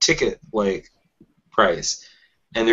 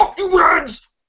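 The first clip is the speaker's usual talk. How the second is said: mock screaming fan, higher. Imagining a fan at another game: imitating a fan screaming. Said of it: "screaming at people?".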